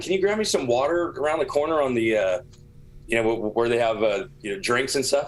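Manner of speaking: ordinary delivery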